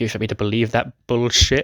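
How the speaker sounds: ordinary talk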